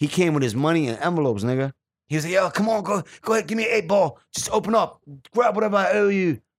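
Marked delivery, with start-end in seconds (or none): 2.3-6.4 put-on pitched-up British accent. Retelling what a kid who lived in the UK said to him, in a UK accent. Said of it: "was a UK accent".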